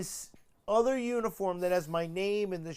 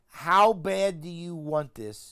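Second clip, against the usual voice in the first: ordinary talk, nothing marked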